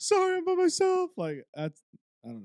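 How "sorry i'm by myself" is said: very high, loud, tearful sobbing. Retelling a TV scene where Jess is asked to leave: imitating Jess crying. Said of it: "she just starts crying".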